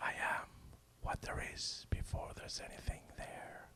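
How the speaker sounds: very quiet, deep, hushed whisper. Reading a scary story aloud as the dark creature speaks: very low whisper. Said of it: "speaks in a very low voice and whisper".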